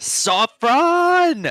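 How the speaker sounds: yelling as loud as possible. Voicing a character calling a friend upstairs: yelling as loud as he can. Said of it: "And he yells as loud as he can".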